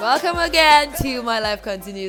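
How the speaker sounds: very loud, spirited, energetic shout. Opening the podcast with a welcome: loud, shouting voice. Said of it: "I think I'm shouting".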